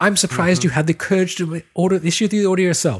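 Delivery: put-on affected British accent. Discussing a film heroine's first scene, quoting her in Princess Leia's affected British accent. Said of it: "she affects this British accent".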